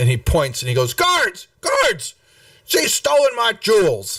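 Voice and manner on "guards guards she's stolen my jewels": very high, swooping, accusing yell. Narrating a game scene, a man points at the player's character, yelling. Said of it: "he's yelling and pointing at you".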